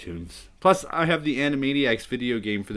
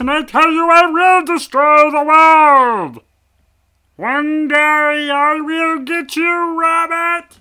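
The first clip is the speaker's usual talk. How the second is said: squeaky, booming, very high, very loud silly put-on voice; 11 dB louder than usual. Retelling how he switches into the funny voice, funny voice. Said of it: "He comes into the funny voice".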